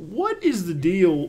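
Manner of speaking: very slow, comic delivery, each word stretched out. Asking the panel a follow-up question: Jerry Seinfeld voice. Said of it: "that's my Jerry Seinfeld impression".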